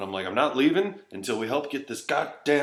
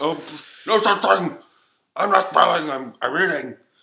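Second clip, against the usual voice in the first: loud, comic put-on fat man character voice; 7 semitones higher, 8 dB louder than usual. Retelling being told off for spilling food at dinner, in a put-on fat man voice. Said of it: "And then Fat Man Voice comes out".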